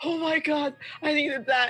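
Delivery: high, tearful laughter while crying. Narrator voicing a woman who collapses laughing after a fight, laughing through tears. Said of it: "hits the ground in a fit of laughter".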